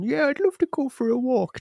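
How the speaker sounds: very high-pitched, silly pet dog voice. Describing pet owners who answer for their dog, dog voice. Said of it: "They'll reply in the dog's voice".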